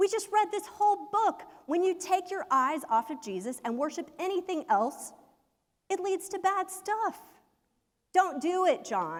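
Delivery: put-on very high, fired-up shouted yell. Retelling what someone yelled after the group finished reading the book, retelling a yell. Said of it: "he yelled".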